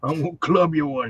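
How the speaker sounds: put-on mean, grumpy old man voice. Recalling the voice in his head scolding the boys, imitating Robert. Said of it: "mean old guy who tells us".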